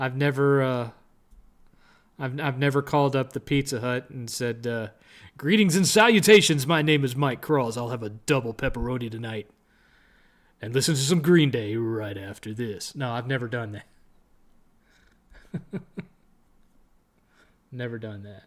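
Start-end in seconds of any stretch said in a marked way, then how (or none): 5.4-12.9 college radio DJ announcer delivery. Pretending to phone Pizza Hut and order a pizza, using a radio voice. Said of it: "using your radio voice".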